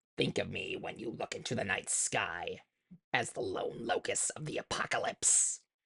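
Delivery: soft, hushed, breathy whispered alien voice. Showing what the cartoon character sounds like, in a Zorak voice. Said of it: "Zorak has a voice like this".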